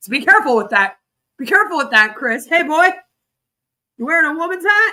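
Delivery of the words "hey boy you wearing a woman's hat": bad, weak, pitched-up put-on Texas accent. Trying out a line to Chris: weak Texas accent. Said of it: "we gotta get a Texas accent on".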